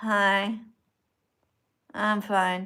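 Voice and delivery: limp, drowsy, half-asleep, barely awake voice. Telling viewers not to join the stream from bed: imitating a sleepy greeting. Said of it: "if you're in bed like this and you're just like".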